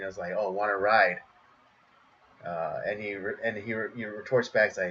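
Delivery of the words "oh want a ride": mock suggestive tone, lower pitch. Retelling a commercial where a woman pulls over: imitating a suggestive offer. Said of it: "and very suggestively".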